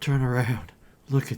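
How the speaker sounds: shaky, trembling, quavering voice. A character nudges Turner on the shoulder at the window: shaky voice. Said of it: "in a shaky voice".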